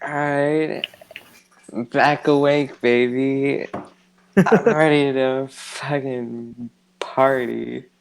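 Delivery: put-on very slow, drawn-out, drunk-sounding drawl. Voicing a character just revived in a game, sounding drunk. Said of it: "you meant to sound drunk? 'Cause you sound drunk".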